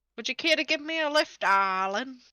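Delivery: odd, unplaceable put-on old lady voice and accent. Narrating a game, voicing an old biddy asking another character for a lift, odd put-on accent. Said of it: "I don't know what this accent is".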